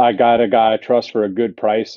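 usual speaking voice

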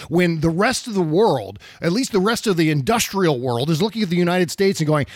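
ordinary delivery

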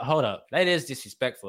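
ordinary talk

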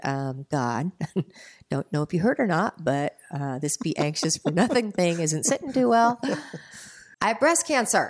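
mildly sarcastic, pointed, a little snarky tone. Retelling own words to God after hearing a verse: imitating own snarky tone. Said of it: "I got a little snarky".

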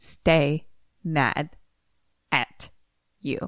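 stiff, non-native sounding reading. Told to redo the line as if never having spoken English, stilted phonetic reading. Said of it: "do it more like like you've never spoken English before".

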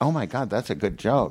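ordinary talk

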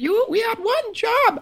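very high, very slow, drawn-out character voice. Quoting a line the other speaker performed: imitating Justin's Nevin voice. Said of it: "I don't mean to do an impression of you".

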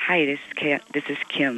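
soft, hushed, low voice.

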